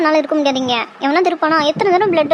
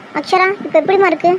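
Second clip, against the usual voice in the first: ordinary delivery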